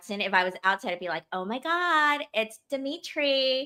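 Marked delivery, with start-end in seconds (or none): 1.3-3.7 very slow, drawn-out, put-on young woman's voice.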